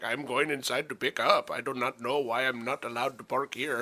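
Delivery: fake, put-on Indian accent. Retelling a parking dispute at a store pickup lot, in a put-on Indian accent. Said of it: "I can't even do my Indian voice".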